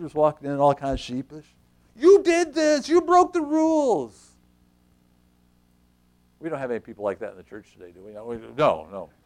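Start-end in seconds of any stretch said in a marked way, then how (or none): 2.0-4.3 put-on slight Yiddish-style accent, high-pitched and loud.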